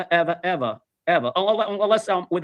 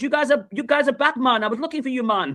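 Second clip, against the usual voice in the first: put-on Jamaican accent, pitched slightly higher; 6 semitones higher than usual. Retelling what a man said while handing out rum, in a Jamaican accent. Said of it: "He goes again with the Jamaican accent".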